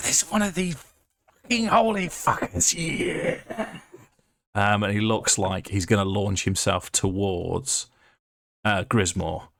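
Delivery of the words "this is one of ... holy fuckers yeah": very high, rapid, rattled-off screeching devil voice. A game master voices a spine devil hit by radiant damage, screeching. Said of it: "it's now screeching, saying".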